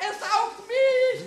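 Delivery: high, loud, slow panicked scream. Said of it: "Jetzt schrei doch nicht so!".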